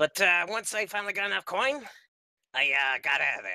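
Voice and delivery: goblin character voice. Telling the goblin character's backstory in character: Wellblood goblin voice. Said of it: "neutral evil goblin ranger".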